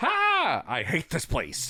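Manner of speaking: triumphant acted voice, loud and exclaiming.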